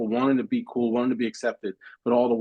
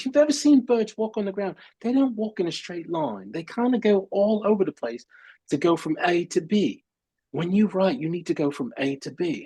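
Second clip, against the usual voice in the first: put-on higher-pitched English accent; 7 semitones higher than usual. Quoting an eleventh-grade English teacher explaining herself, in an English accent. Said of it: "she had an English accent".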